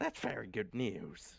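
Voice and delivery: acted female character voice. Voicing a female game character's reply, in a female NPC voice. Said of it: "she'll say in her voice, of course. Let me fucking get back into this voice".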